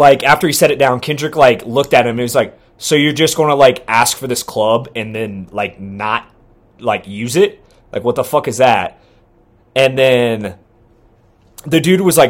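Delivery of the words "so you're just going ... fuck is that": ordinary talk, nothing marked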